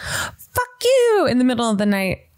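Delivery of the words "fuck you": put-on shrill, very high-pitched scream. Recounting shouting in one's sleep during crazy dreams, retelling a scream. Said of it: "I'm screaming like".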